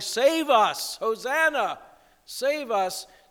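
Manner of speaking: high, crowd-like shout. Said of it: "the crowds who had been shouting".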